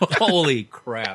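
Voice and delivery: laughing exclamation.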